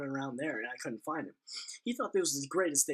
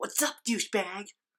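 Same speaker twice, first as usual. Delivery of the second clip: put-on pitched-up voice of a ten-year-old kid; 7 semitones higher, 4 dB louder than usual. Retelling calling out to a passing skater kid: ten-year-old voice. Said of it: "My ten year old voice".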